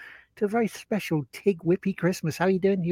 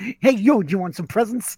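put-on Brooklyn accent in an elf voice. Calling his elf the brooklyn elf, the speaker shows it: brooklyn elf voice. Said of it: "kind of the Brooklyn elf".

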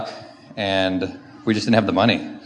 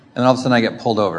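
ordinary talk, nothing marked

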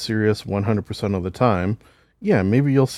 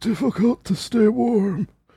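put-on very high-pitched old-man voice; 13 semitones higher than usual. Retelling what is said when cold: Data old man voice. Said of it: "is a goddamn spot-on impression".

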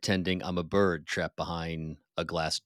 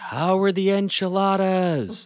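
loud, high-pitched shouted yell; 14 semitones higher, 7 dB louder than usual. Retelling going past a quiet restaurant on a ride; retelling a yell. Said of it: "So I yell out".

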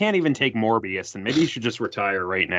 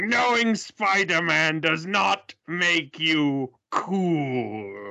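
put-on tough vampire-hunter voice, pitched somewhat higher; 8 semitones higher than usual. Quoting Blade's line to someone who knows Spider-Man: Blade's line from the cartoon. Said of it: "I do use Blade's line from that show".

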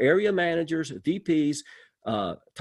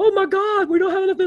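mock, very high, loud, frantic panicked voice; 7 dB louder than usual. Retelling own past worry about too much business: imitating own freaked-out voice. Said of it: "I'd be freaked out about both".

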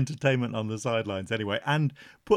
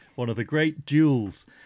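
ordinary delivery

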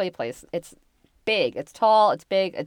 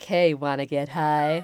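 low, creepy voice; 4 semitones lower than usual. Mocking the idea of someone offering drugs, in a creepy voice. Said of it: "In a creepy voice".

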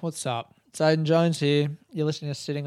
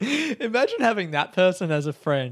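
ordinary talk, nothing marked

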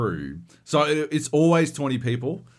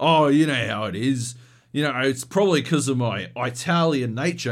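put-on, very proud, boastful tone; 2 semitones higher than usual. Retelling what an Uber driver said: imitating a proud explanation. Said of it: "very proudly explaining to me".

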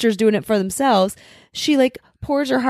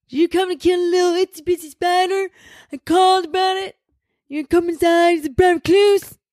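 higher, creepy, unsettling, off-putting character voice; 8 semitones higher than usual. Asked by friends to redo an impression from a scene: character impression from a scene. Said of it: "Do your impression again".

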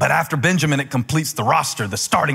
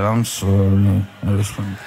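mocking, reluctant, lower-pitched tone; 7 semitones lower than usual. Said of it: "like your mom made you say that".

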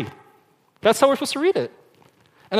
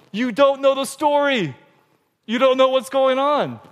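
high, slow, frustrated, exasperated groan. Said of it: "she gets so frustrated where she's like".

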